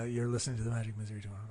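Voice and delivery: very hushed, low, smooth and suave murmur. Co-host asked to try the show intro, in a low smooth suave voice. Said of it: "let me give my best".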